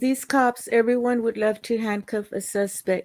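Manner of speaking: usual speaking voice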